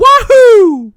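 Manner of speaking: high, loud, gleeful wahoo whoop.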